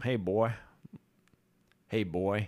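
slow, put-on Northern accent. Retelling Union soldiers questioning a captured Confederate soldier, in a put-on Northern accent. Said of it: "in the Northern accent".

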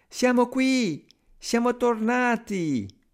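put-on very high, happy, cheerful little children's voices. The seven little brothers call out as they arrive at the door, cheerful little voices. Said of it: "delle vocette allegre".

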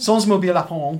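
put-on French accent with laughter.

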